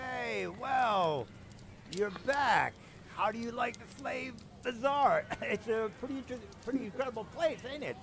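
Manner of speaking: put-on drunk voice. Voicing a drunk character greeting a player in the pub: acting drunk. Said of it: "he looks like he's pretty, pretty drunk".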